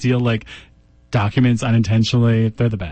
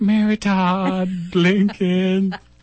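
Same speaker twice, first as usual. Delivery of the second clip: quavery put-on voice, higher pitched; 8 semitones higher than usual. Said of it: "just quavery".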